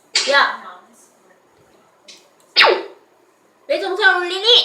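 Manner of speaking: high-pitched telling-off tone. Acting out what the mother says to the older brother: imitating the mother. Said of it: "막 이렇게 얘기하는 거예요".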